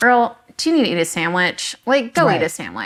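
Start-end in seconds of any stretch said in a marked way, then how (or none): none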